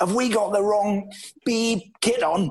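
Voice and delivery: play-acted, high-pitched half-yell, kept light. Retelling a manager calling the kit man: imitating Jack screaming. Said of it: "He's screaming".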